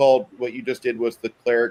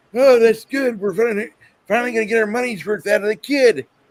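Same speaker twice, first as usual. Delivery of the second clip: put-on grandpa character voice, pitched way up, very high; 11 semitones higher, 4 dB louder than usual. Retelling a video sketch where the B-52 talks: imitating Grandpa Buff. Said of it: "Grandpa Buff in the last video is like".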